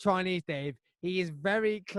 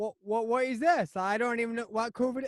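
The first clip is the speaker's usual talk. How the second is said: botched, high-pitched put-on Cornish accent; 5 semitones higher than usual. Joking about Cornish people and acting one out: bad Cornish accent. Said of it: "that's not even a Cornish accent".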